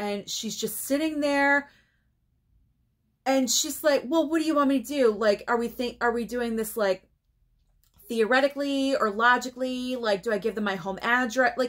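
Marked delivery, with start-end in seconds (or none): none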